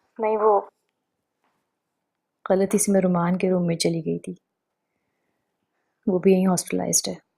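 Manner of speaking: tearful speech, crying while talking. A woman lost in a hospital answers a man guiding her, crying while talking. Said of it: "और तुम रो क्यों रही हो?".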